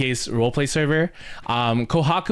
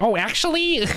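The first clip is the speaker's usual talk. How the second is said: nerdy character voice, high; 7 semitones higher than usual. Asked which voice they mean, the speaker shows it: nerd voice. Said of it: "Like the nerd voice?".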